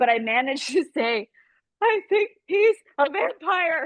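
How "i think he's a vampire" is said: play-acted, very high, crying, heaving, sobbed words. Retelling what was said to the husband: imitating heaving sobs while speaking. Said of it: "I'm crying so hard, I'm heaving".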